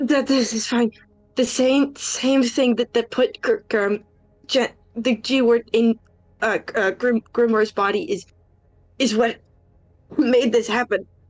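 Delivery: heavy, halting stutter, repeating words and sounds. Mid-scene, a character struggles to get an explanation out, stuttering more than usual. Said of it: "stuttering more than usual".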